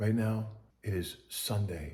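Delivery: very quiet, low, hushed voice. Starting a vlog intro with the date: low voice. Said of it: "I start talking in a low voice".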